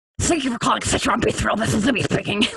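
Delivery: silly, ridiculous animated cartoon cat character voice. Doing a character voice a coworker requested, in Sylvester the Cat voice. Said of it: "Like doing like this like ridiculous, just like Sylvester the Cat kind of voice".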